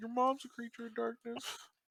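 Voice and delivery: soft, quiet remark pitched very high. Narrating your character's remark during a battle in an actual-play game, said quietly. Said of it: "you hear him quietly say".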